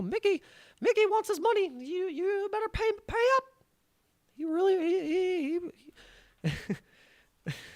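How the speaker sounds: squeaky, very high cartoon mouse voice, stretched giggles. Joking about where the money went, doing a Mickey voice. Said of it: "I do a good Mickey voice".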